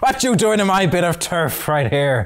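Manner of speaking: put-on Irish accent. Voicing an encounter character who confronts the players: put-on Irish accent. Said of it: "Irish is back".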